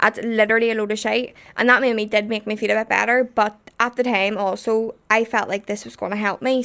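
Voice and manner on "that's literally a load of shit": normal talking voice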